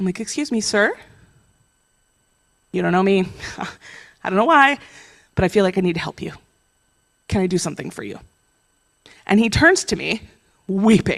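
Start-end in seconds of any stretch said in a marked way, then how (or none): 0.2-8.2 very quiet, very gentle, quick, soft-spoken voice. Approaching a stranger leaning on a trash can, retelling speaking very gently. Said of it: "I come up very quietly, very gently".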